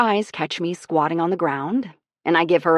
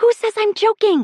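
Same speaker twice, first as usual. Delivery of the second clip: very high, loud stage whisper; 4 dB louder than usual. Reading a story aloud, a friend answering in the salon: loud whisper. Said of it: "she says in a loud whisper".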